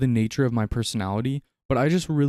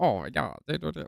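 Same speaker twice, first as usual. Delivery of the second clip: put-on snake-like voice, quieter; 2 semitones higher, 7 dB quieter than usual. Imitating a game character who has that snaky voice: imitating Seluvis's voice. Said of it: "he just speaks like".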